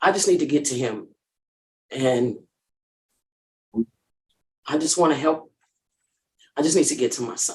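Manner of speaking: tearful voice, crying while speaking. Asking to return home to a son in hospital, crying while speaking. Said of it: "I said I wasn't gonna cry".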